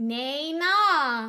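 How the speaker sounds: bright, released, unrestrained, ugly-sounding tone, "na" drawn out. A voice coach demonstrates the first syllable of a belt exercise: bright, released voice. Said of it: "in a really bright and released voice".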